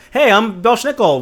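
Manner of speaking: friendly, cheery, high, slow, welcoming voice.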